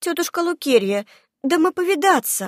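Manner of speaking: shy, hesitant, timid, high little voice. A red-haired girl answers the aunt who is scolding the girls; timidly. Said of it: "робко ответила рыженькая".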